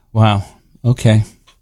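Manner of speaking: deflated, very low, disappointed letdown. Asked to redo the line disappointed, the speaker performs it disappointed. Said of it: "How about disappointed".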